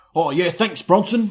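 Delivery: failed, bad put-on Cockney accent. After praising a film, the speaker tries an attempted cockney accent. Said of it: "I can't do Cockney".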